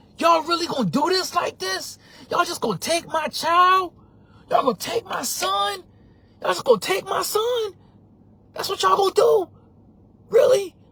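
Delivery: very high, loud, furious outburst of disbelief. Retelling seeing someone take the speaker's child out of the car: retelling losing it. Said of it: "And I lose it".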